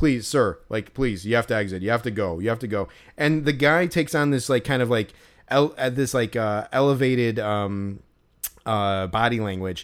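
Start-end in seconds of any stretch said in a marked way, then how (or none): 0.0-2.9 acted-out urgent, begging, pleading tone. Retelling how a security manager urged a man to leave: imitating someone pleading. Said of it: "pleading with him".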